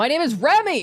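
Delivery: shouting at the top of the lungs. Answering a phone call and giving one's name: yelling. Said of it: "you're yelling".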